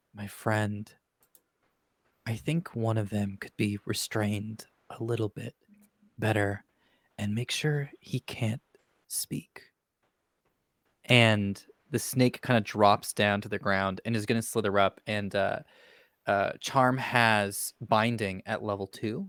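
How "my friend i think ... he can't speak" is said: soft, hushed in-character half-whisper. Voicing a character who half-whispers to a smoky snake while flying: half-whispering in character. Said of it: "And I whisper".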